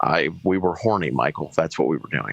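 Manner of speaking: ordinary delivery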